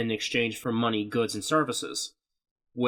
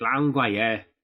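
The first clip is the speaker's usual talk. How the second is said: put-on, mock British accent; 3 dB louder than usual. Joking that a dubbed boy would speak british: put-on british accent. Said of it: "you expect him to start fucking saying shit like".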